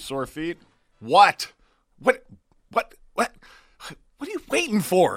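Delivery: slow, theatrical delivery. Live show host reading a sponsor ad as a dramatic reading. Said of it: "That was our dramatic reading of the Kintech read".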